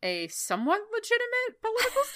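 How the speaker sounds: voice shooting way up into an uncomfortable squeak.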